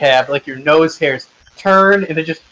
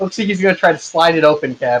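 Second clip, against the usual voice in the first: usual speaking voice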